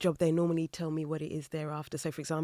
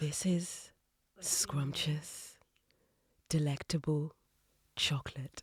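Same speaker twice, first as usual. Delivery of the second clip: smooth, sensual advert voiceover, quieter; 4 dB quieter than usual. Joking about voicing a chocolate advert: sensual chocolate advert voice. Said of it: "Then you could turn on the, like, sensual".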